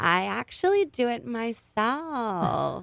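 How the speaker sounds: soft, irritating put-on celebrity voice. Retelling her answer to a makeup question, the speaker imitates her annoying voice. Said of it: "I was doing an impression because her voice is so annoying".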